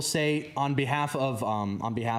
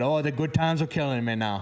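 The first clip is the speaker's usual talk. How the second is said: rough, put-on Cajun accent over northern speech; 3 semitones higher than usual. Repeating a Cajun saying someone taught the speaker, in a Yankee version of Cajun accent. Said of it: "That's a Yankee Boys version of a Cajun accent".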